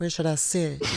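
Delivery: soft, sugary sweet voice. Retelling what a man being fitted with a microphone said, imitating a sweet voice. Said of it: "he's talking in a sweet voice and goes".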